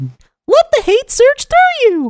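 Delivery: squeaky cartoon villain voice. Recalling a funny recording moment, reprising the Mickey Mouse Palpatine voice. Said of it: "came out of Mickey Mouse Palpatine".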